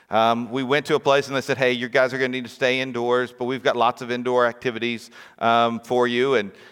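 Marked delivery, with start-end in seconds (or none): none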